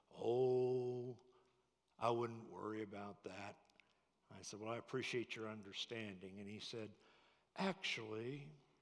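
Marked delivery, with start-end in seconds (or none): 0.2-3.6 deliberate, easygoing, very slow with drawn-out "oh". Retelling what Grandpa said about the unpaid payments: imitating slow speech. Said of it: "He spoke real slow".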